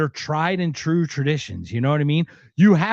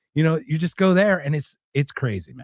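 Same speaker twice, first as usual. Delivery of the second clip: plain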